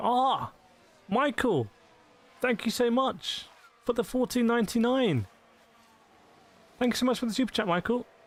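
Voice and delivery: shocked, excited, high voice.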